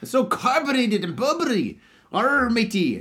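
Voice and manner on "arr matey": failed Irish accent sliding into pirate voice. Chatting about a drink, a speaker tries a bad irish accent that sounds pirate-like. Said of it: "I can't do a fucking Irish accent".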